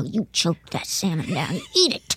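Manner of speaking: bossy, stern motherly voice with swooping pitch. Recalling being told to eat salmon at dinner, imitating mom's voice. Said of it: "hearing my mom's voice go".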